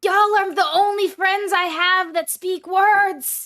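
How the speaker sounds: scream whisper. Voicing a character confiding in the group: scream whisper. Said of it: "in one of those, like, scream whispers goes".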